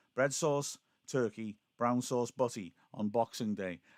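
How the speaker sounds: ordinary talk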